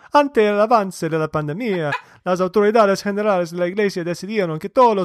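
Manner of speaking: Argentinian Spanish accent. Reading a church news article aloud in Spanish, Argentinian Spanish accent. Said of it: "I should speak like an Argentinian".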